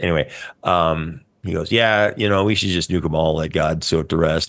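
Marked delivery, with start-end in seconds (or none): none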